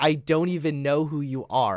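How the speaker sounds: ordinary talk, nothing marked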